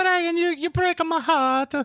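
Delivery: mock elderly Italian voice. Ending an imitation of the other speaker's argument: old italian voice. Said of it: "old Italian no, no".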